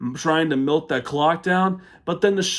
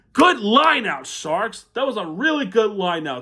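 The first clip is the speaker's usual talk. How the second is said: sarcastic, faux-approving, swooping praise; 5 semitones higher than usual. Recapping a bad lineout that let the other team score: sarcastic. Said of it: "I say those in a sarcastic manner".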